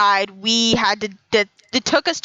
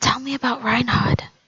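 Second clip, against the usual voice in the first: soft, whispered, barely voiced; 2 semitones higher than usual. Playing a character who keeps asking another character something: whispering. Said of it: "I just keep whispering".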